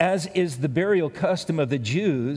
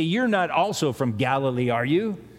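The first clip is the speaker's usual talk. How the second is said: put-on snide, sarcastic, put-down tone. Speaker retells what the group said snidely to the man, mock-snide.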